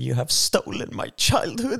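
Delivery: mock quavering near-tears voice, very high. Retelling how a woman performed a dramatic speech; mock trembling, near-tears voice. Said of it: "med darrande röst och gråtfärdig".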